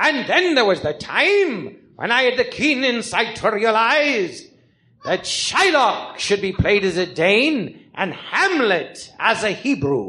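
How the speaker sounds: pompous theatrical actor voice. Performing the diary of the greatest actor of all time: Master Thespian voice. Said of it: "So Master Thespian".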